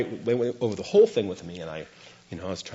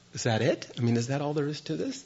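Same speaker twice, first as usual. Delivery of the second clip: surprised, incredulous, taken aback, with rising pitch; 5 semitones higher, 6 dB quieter than usual. Retelling the teacher's quick acceptance: imitating own past surprise. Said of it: "surprised at that too".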